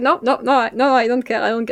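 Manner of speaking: mock stubborn, unyielding tone. Retelling refusing what the mom said: imitating own stubborn refusal. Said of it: "I get fucking stubborn".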